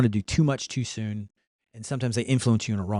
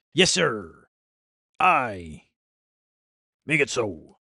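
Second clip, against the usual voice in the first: swashbuckling ship's pirate voice. Speaker talks to his ai assistant, in a pirate voice. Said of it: "Now I'm talking like a pirate".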